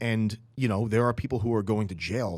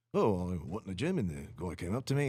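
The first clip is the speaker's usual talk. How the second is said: put-on storytelling tone in Australian accent; 3 semitones lower, 4 dB quieter than usual. Retelling Dorian Yates's gym story in his words: Australian-sounding Dorian Yates impression. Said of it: "I'm sorry, that's Australian".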